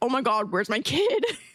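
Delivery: frantic, panicked, freaking-out outburst. Retelling the dad's reaction after running over a kid: imitating a panicked dad. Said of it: "flipping the fuck out".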